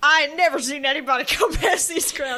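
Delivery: put-on voice of an elderly groundskeeper. Contrasting two characters' vibes, the speaker mimics one: old groundskeeper voice. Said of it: "this old groundskeeper who's like".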